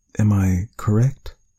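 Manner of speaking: faltering, hesitant, strained but holding it together. Reading a doctor asking a man a question, hesitant, struggling for composure. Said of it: "with a bit of hesitation, struggling to remain composed".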